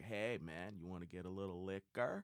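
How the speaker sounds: put-on comic party-dude voice with Puerto Rican accent. Retelling what a buddy said at his house: Puerto Rican Pauly Shore voice. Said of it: "He's like".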